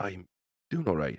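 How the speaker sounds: barely-there, soft half-whisper, held close. Voicing Zed holding the little one close: almost half-whispering in character. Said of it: "almost whisper".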